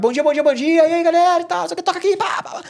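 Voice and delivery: very high, bubbly, upbeat, cheerful burst. Retelling how he used to greet coworkers each morning: imitating his own cheerful greeting. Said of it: "naquela vibe de chegar".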